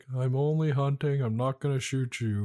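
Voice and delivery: dry, droll, matter-of-fact deadpan delivery. Retelling a fight, quoting a guy before he turned violent: imitating a droll tone. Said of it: "the very droll guy who's just like".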